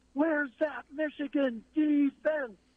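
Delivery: very high, long, drawn-out hollering yell. Retelling how his brother stood among michigan fans and yelled: imitating someone yelling. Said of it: "and yells".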